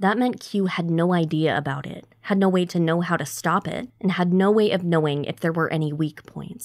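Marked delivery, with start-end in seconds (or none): none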